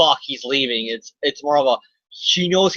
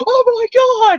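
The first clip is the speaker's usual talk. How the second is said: very high, loud, frantic freaking out; 7 dB louder than usual. Acting out a comic scene, Peter Parker learns Mary Jane is downstairs: Peter Parker freaking out. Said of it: "freaking out".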